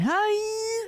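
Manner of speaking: very high scream, stretched out long. Imitating how the actor screams, like a motorcycle: Nick Cage yelling voice. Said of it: "It's always like".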